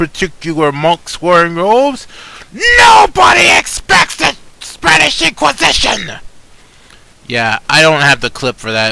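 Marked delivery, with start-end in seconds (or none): 2.5-6.1 very high, creaky, rough put-on shout. Quoting a line from a clip as an impression: put-on impression voice. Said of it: "I hope I did a good impression of that".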